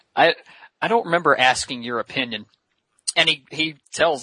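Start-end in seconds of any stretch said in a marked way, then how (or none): none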